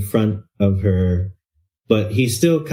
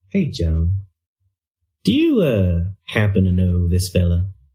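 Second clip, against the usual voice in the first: whispering in a character voice; 3 semitones lower than usual. Playing a character who turns to whisper a question to joan: whispering in character. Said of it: "turns his head a little bit to whisper to her".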